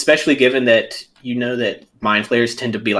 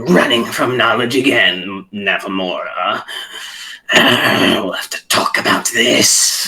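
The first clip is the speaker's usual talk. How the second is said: irritated put-on character voice. A narrator voicing Golor in Laura's head as she leaves, irritated. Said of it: "Like irritated at you".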